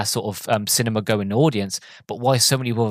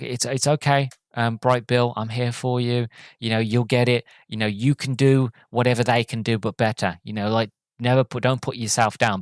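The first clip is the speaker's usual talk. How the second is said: gentle, calm, steady, motherly, reassuring voice. Retelling what a story character says to the runt of the litter, imitating a calm voice. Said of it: "She just talking calm".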